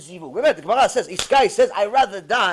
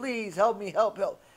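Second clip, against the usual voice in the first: put-on sobbing, crying voice, quieter; 8 dB quieter than usual. Retelling a story of a man praying by the ark: imitating someone crying. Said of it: "all the tears".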